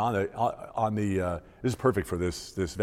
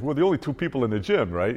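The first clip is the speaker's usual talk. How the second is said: put-on casual Bronx-accented speech; 5 semitones higher than usual. Retelling a woman's reply at the gym, in Connie Sellecca's Bronx accent. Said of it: "in her Bronx accent".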